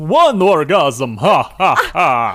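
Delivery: put-on vampire voice. Speaker riffs on being keeper of the count, in a Sesame Street Count voice. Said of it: "that's a great voice".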